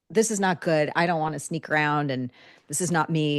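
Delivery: ordinary talk, nothing marked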